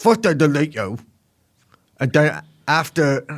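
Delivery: put-on blend of English and American accents. Reading a quote aloud, trying to get it right: Andrew Tate impression. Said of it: "an impression of Andrew Tate in his bizarre English American accent".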